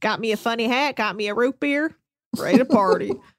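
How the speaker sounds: put-on southern Texan drawl. Joining in imitating the texan guy: imitating a southern accent. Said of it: "He's got the Southern accent".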